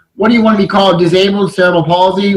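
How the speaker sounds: plain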